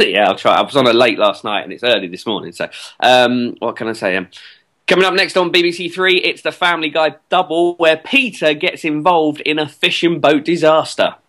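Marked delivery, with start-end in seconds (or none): 4.9-11.1 pitched-up TV continuity announcer delivery. Guest asked by the host to do his voice, in a tv announcer voice. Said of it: "can you do a little voice for us now".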